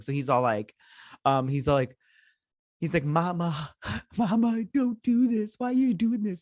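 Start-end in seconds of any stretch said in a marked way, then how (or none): 3.0-6.4 very high, badly faked blubbering crying. Recapping a scene, a character pleading with his mama, imitating bad fake crying. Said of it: "he's doing some bad acting here with his crying".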